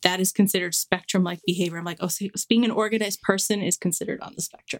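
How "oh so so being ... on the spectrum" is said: normal talking voice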